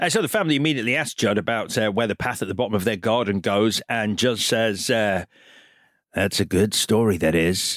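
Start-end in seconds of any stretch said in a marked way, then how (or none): 4.9-7.8 ominous put-on voice, much lower and slower. Recapping the film, the speaker acts out Judd answering the family: ominous Judd voice. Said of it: "as you can tell from my tone of voice".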